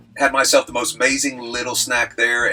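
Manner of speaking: ordinary talk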